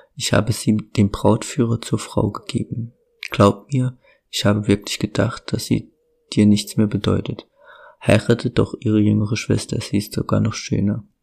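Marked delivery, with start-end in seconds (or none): none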